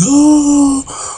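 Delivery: very high, slow pleading voice. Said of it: "Judy's like".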